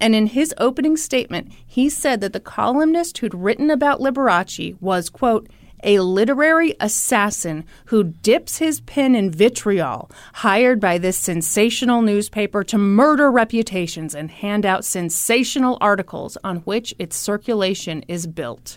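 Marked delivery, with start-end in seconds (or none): none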